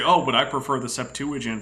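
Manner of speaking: ordinary talk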